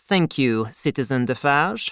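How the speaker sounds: ordinary delivery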